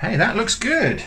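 very high, startled, surprised tone. Turning a christmas pudding out onto a plate, surprised. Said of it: "I don't know why I sound surprised".

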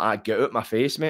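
ordinary talk

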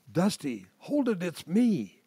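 composed, cool, quiet, calm voice. In the dark, a figure stops Dusty from swinging, in a cool, quiet voice. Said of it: "a cool, quiet voice said".

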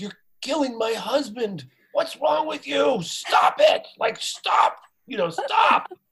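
put-on, very high, furious, livid scolding tone. Retelling how the writing partner's wife confronted him: imitating a livid wife. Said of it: "she was livid".

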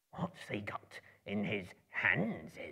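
slow, drawn-out, hissing creature voice. Reading the story aloud, voicing Gollum in his scene with Bilbo: Gollum's hissing whisper. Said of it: "a small, slimy creature. ... up came [name] and whispered and hissed. ... he hissed".

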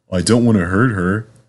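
plain reading voice

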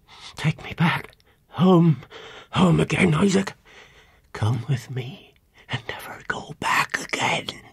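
slow, horrified whisper. A woman speaks to a man before he can say a word: horrified whisper. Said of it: "she whispered with a look of horror".

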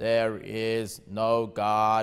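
very deep synthesized robotic computer voice. Describing a man whose computer talked for him, the speaker is imitating a computer speech voice. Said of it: "he'd talk like this".

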